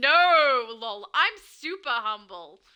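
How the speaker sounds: sarcastic, tongue-in-cheek tone. Reading out Diego's line as if he were sarcastic, mock-sarcastic. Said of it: "I read it like he was being sarcastic".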